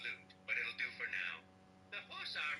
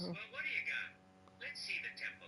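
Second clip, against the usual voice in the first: high-pitched gangster mob boss voice; 7 semitones higher than usual. Reacting to a game partner's finds: mob boss voice. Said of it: "Mob boss voice".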